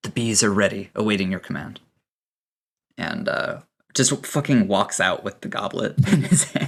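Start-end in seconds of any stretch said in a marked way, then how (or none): 0.0-1.8 whispering, much faster. Narrating a game scene, a character sets down a goblet before Ribbon, whispering. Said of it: "he he just whispers".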